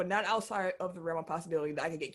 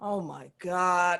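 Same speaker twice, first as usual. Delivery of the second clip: put-on upset exclamation in a man's voice; 3 dB louder than usual. Retelling what a man behind them said in the movie theater: imitating an upset man. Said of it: "he was upset".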